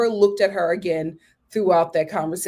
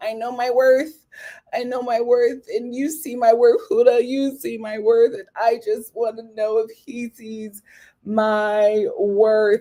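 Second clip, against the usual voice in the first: mock tearful pleading, drawn-out "my"; 2 semitones higher than usual. Retelling a contestant's words at the recoupling, imitating someone crying. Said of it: "Bella is crying, saying".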